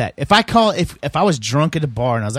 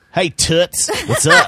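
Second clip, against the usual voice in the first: put-on old-timey 1920s style, higher; 3 semitones higher than usual. Showing how the nickname toots gets said, old-timey 1920s greeting. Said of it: "that's the 1920s hey, way of saying it".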